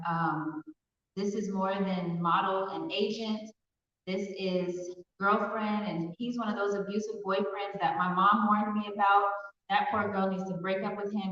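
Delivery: ordinary delivery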